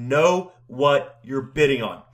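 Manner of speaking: very stern, low, no-nonsense tone. Speaker quotes a man's warning to bidders, retelling a very stern warning. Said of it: "He would say in a very stern voice".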